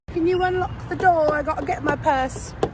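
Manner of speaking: strained Essex accent attempt. Speaking to Ruth: attempted TOWIE English accent. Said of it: "trying her very utmost to speak in an English accent".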